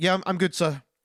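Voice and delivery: put-on, terrified, nervous, fearful voice. Retelling a movie scene, a frightened kid answering an intimidating man, mock-terrified reply. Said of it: "Spider-Man is shitting himself".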